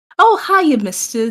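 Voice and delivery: high, honey-sweet, sugary voice. Voicing Nova asking a guy for help: honey and sweetness in his voice. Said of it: "all the fucking, just honey and sweetness in his voice".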